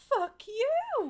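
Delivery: sweet friendly tone. Swearing at an eighteen-month-old, said in a really nice tone. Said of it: "say in a really nice tone".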